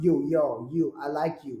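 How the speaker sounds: put-on tough, gangster-style New Jersey accent, female voice. Chiming in while a host describes an actress's Jersey girl accent, in Jersey girl accent. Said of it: "she does this Jersey girl accent".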